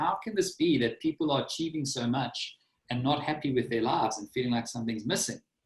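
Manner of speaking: normal talking voice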